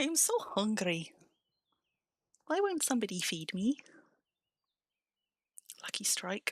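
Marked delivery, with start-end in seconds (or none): 0.0-3.8 put-on demanding pet voice, higher. Retelling how the pet has pestered all evening for food: voicing the hungry pet. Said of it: "the little horror that has been dabbing me all evening. Being like".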